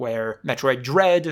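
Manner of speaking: stressed, slowly stretched word Dread. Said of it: "emphasis on the Dread".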